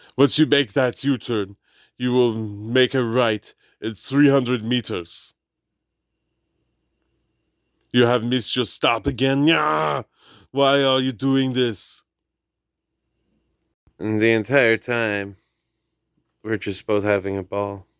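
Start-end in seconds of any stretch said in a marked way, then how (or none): 0.2-12.1 fake Austrian-accented navigation voice. Retelling a car ride, doing GPS directions in an Arnold voice. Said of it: "I was doing an Arnold impression".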